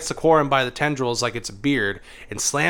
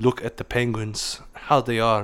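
put-on old man voice with German accent; 2 semitones lower than usual. Quoting a nature documentarist in conversation, using a german old man voice. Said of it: "That's my go to German old man voice".

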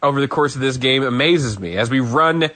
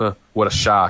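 put-on muttered aside, lower; 5 semitones lower than usual. Retelling the call of the night when Jamie misses a flag: imitating Michael Cole under his breath. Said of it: "under his breath goes".

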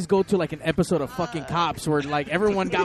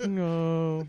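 put-on droopy, gloomy voice; 4 dB quieter than usual. Mocking how the drummer sounds: imitating Eeyore. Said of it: "He's like".

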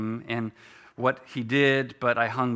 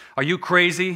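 loud, contemptuous, scornful sneering; 7 semitones higher, 5 dB louder than usual. A man leaning on a telephone pole answers the ragman, sneering. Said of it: "sneered the other".

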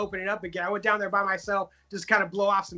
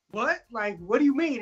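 acted, mock-scared, frightened-sounding voice; 3 semitones higher than usual. Retelling a staff member checking on him while gaming, acting out his scared reply. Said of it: "I turned around like all scared".

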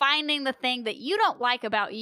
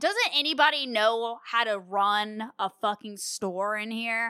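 ordinary talk, nothing marked

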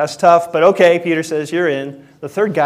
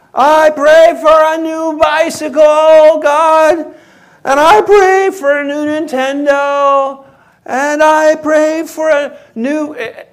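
put-on child hollering at the top of his lungs, very high; 12 semitones higher, 5 dB louder than usual. Retelling how the youngest child said his prayers, imitating a child shouting. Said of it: "he's shouting at the top of his lungs".

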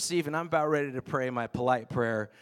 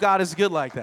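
ordinary talk, nothing marked

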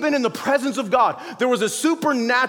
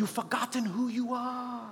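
soft, quiet, gently eased-into storybook character voice; 13 dB quieter than usual. Retelling the moment Rafiki comes and reminds him, Rafiki voice. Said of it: "I hope my little voices are keeping you awake".

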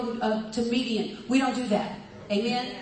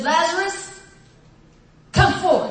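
loud, raised, commanding calling voice; 6 semitones higher, 7 dB louder than usual. Retelling scripture: Jesus calls a dead man out of the grave, loud voice. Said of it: "with a loud voice".

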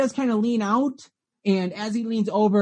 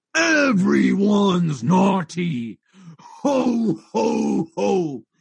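very slow, lumbering giant monster voice. Storyteller voices a towering red Santa-like creature greeting the players: giant Santa monster voice. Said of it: "There is a giant burlippy Santa that is 20 feet tall, huge, swinging a giant sack of what you would think is toys. / There is a giant burlippy Santa that is 20 feet tall, huge, swinging a giant sack o".

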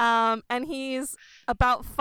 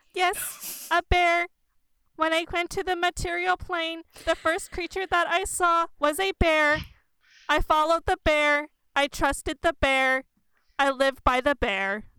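stiff, half-robotic, pitched-up voice; 5 semitones higher than usual. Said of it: "[name] is a half construct who is a kind of robot with a like a fleshy mouth".

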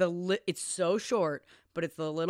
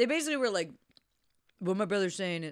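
speaking while chewing, with a mouth full of food. Speaker talks while eating a peach; talking with mouth full. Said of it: "I just ate peach while I'm trying to talk".

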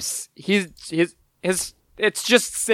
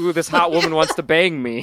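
put-on nervous voice. Recapping a scene, voicing Tommy as he smiles: put-on nervous Tommy voice. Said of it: "Tommy smiles nervously like".

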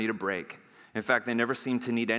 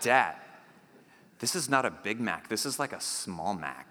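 put-on let-down, disgusted child tone. Retelling a son's reaction to his first big mac: imitating son's disgust. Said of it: "he looks at me with disgust".

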